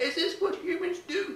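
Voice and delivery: very high, hushed, soft awful alien voice. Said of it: "worst alien impression I've ever done".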